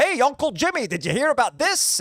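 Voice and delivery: put-on cranky New York accent. Speaker describes an actor's recurring sitcom bit role, mock-angry New York uncle. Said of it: "He was the angry uncle in everything".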